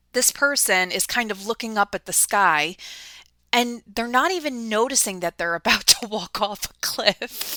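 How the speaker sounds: talking through laughter, words broken up by laughing. Describing the imagery of the Fool card, the speaker is laughing while talking. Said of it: "I'm sorry I'm laughing".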